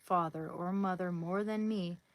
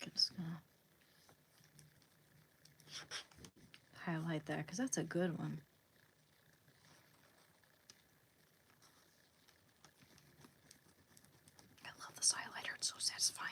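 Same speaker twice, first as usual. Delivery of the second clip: fast, breathy, hushed, barely-there whisper; 9 dB quieter than usual. Highlighting something while reading comments aloud: whispering. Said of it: "Why am I whispering?".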